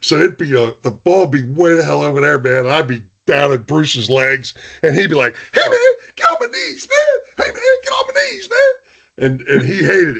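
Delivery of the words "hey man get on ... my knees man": tiny, very high, squeaky little voice. Recalling blocking low at an opponent's legs, speaker imitates Bruce's high-pitched voice. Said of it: "Bruce had that little high pitched voice".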